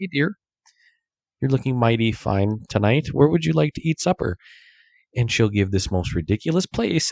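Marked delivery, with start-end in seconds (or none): 0.0-4.4 sweet, charming, courteous, very nice tone. Acting out how he asks where to eat: imitating asking very nicely. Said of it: "I will ask very nicely".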